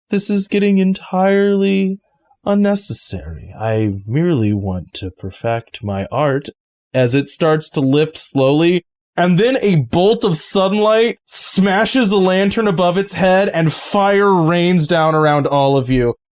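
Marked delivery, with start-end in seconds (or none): 0.1-6.5 voice of a living statue creature. Voicing the statue creature as a character drags a figure away: voice of the statue creature. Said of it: "And it goes".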